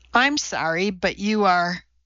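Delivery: condescending, patronizing, talking-down tone. Narrator reads a man answering a woman's introduction, condescending. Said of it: "he said condescendingly".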